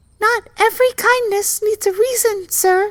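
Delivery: very high, squeaking little mouse voice. Narrating a fable, the mouse answers the lion in a squeaky mouse voice. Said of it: "she squeaked".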